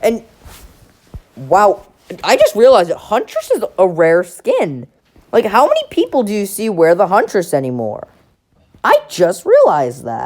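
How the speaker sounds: breaking voice, cracking repeatedly. Someone reviewing battle pass skins realizes the Huntress skin is rare: voice cracking. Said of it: "I swear I just voice cracked like three times".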